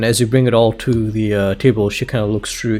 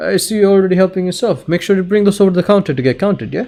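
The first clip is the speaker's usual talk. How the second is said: small, high-pitched gnome-woman voice; 9 semitones higher than usual. Voicing the woman behind the counter, who sees a customer helping himself: little gnome woman voice. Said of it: "this little gnome woman".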